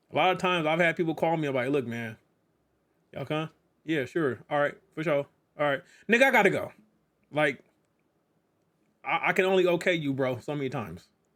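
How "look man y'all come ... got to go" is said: put-on annoyed but polite, curt tone. Retelling own replies to people who call: imitating own annoyed but polite tone. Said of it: "I got a little a-, anger in my tone, but I'm being polite".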